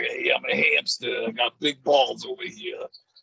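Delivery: put-on Brooklyn accent character voice. Recalling giving a pet hamster a voice, in a put-on brooklyn accent. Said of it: "like a Brooklyn kind of".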